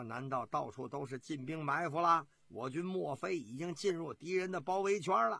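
usual speaking voice

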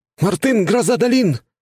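heated, very high-pitched blurted outburst. The skinny guy answers the gray-haired man's question: blurted out heatedly. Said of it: "с жаром выпалил тощий".

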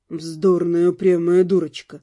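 tender words, very low pitch. A man draws his wife close and speaks to her very quietly. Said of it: "уже совсем тихо проговорил".

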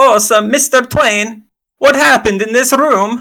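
soft-spoken put-on Italian voice. Playing a character questioning Mr. Twain about a room, in Sprig Summerfoot's Italian voice. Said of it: "find my Italian voice".

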